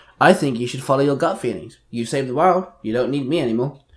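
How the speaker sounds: plain reading voice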